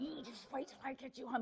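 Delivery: fierce shout delivered in a whisper. Acting out a parent threatening a child in a shop: imitating a whisper-shout. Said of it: "but you're whispering it".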